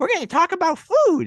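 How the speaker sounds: very high, loud, squeaky little puppet voice. Retelling a skit opening to another speaker, Elmo voice. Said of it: "I'm not very good at Elmo's voice".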